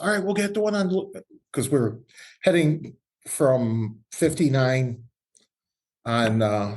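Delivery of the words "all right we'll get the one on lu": mock high-pitched, raised shout. Retelling what a buddy said while riding on the road: imitating a yell. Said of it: "he yells".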